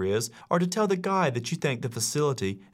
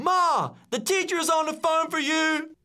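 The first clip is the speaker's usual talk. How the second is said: very high yell at the top of the lungs. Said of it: "they yell at the top of their lungs".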